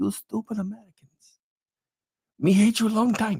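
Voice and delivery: bad fake Chinese accent. Parodying China's response to US tariffs, in a bad fake Chinese accent. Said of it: "I can't do a Chinese accent very well".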